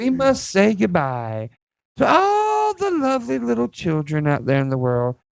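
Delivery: creepy, leering sing-song voice. Signing off the show to the children listening, in a creepy pervert-like voice. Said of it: "I sounded like a pervert all of a sudden".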